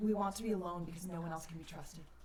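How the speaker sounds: soft, hushed, half-whispering voice. Narrating a game, voicing a key that speaks inside a player's head, half-whispering voice. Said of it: "and it whispers".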